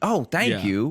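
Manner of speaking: put-on cheerful, upbeat delivery. Retelling their own reply to a store worker: imitating own upbeat thanks.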